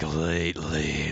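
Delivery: growly, gravelly rasp on the word 'lately'. Imitating how she said a word at the sentence end: gravelly 'lately'. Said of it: "this little hint of like grovelly voice".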